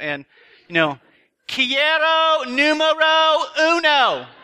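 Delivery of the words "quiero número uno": very high-pitched yell. Leaning out the window when nothing's happening, the speaker retells a yell out the window. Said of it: "lean out your window and yell".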